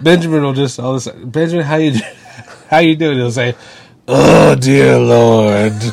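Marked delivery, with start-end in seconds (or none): 4.1-5.7 put-on worn-out weary voice, much slower, louder. Describing what Benjamin will say when greeted, the speaker goes imitating Benjamin, worn-out.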